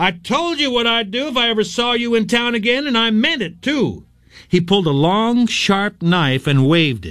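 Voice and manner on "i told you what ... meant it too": high-pitched screaming. Stopping his car, a man shouts at another man coming out of an alley: screaming. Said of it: "He stopped the car and screamed".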